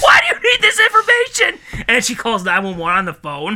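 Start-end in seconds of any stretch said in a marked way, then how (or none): 0.0-1.8 mock panicked outburst, higher and louder. Acting out a shopper accusing a coughing clerk: imitating someone freaking out. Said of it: "she freaks out like".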